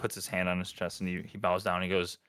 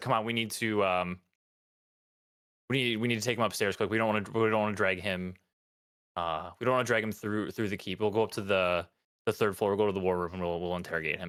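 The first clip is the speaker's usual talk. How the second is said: ordinary delivery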